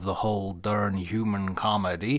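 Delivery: put-on cowboy drawl. Saying a book title aloud: Sam Elliott impersonation. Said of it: "It's my best Sam Elliott impersonation".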